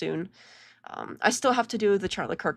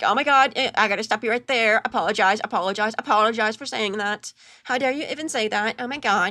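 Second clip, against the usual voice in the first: mocking voice, pitched higher and louder; 3 semitones higher, 6 dB louder than usual. Mocking how the host denies things, imitating Brian. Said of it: "That's how I imagine Brian sounds".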